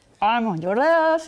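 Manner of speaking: strong, confident, big, loud boss voice. Retelling calling out to a woman walking a dog: big strong voice. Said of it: "the big strong voice".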